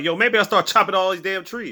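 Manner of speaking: mocking sarcastic remark. Recapping an episode for listeners, retelling another person's sarcastic remark. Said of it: "Dean sarcastically is like".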